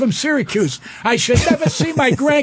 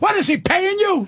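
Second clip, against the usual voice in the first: acted woman's yell, high and sharp; 6 semitones higher than usual. Retelling a court hearing where one of the sisters yells out; imitating a woman yelling. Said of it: "this woman yells out".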